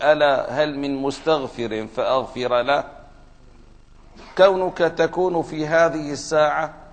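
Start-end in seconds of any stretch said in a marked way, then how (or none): none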